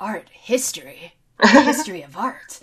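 very loud, booming game-hero voice, belted out. Launching into an explanation linking art history with Metal Gear for a listener, in a Solid Snake voice. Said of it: "this solid snake voice".

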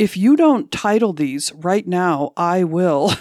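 mock-stern delivery. Quoting what a gallery person once told you, imitating a rather stern tone. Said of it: "saying to me rather sternly".

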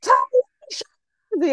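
put-on shrieking, screaming, very high-pitched. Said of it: "screaming at a kid".

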